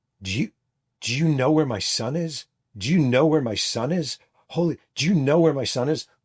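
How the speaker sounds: put-on, high-pitched screaming through sobs. Retelling a woman's reaction on the phone, imitating someone screaming. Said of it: "this woman starts screaming".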